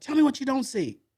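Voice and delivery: acted-out, loud, very high angry scolding. Speaker retells his trainer quizzing him, mock angry scolding. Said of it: "he's cussing me out".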